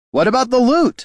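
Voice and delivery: very high, loud shout. Haraldin shouts from behind Gorm as the heroes ride off, shouted. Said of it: "Haraldin shouted".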